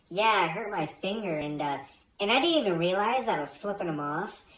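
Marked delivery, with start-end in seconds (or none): none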